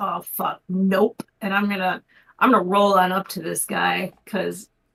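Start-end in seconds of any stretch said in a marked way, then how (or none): 0.0-1.2 grumbled, muttered aside. Speaking in character after hearing the auction price: muttered under breath. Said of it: "under my breath go".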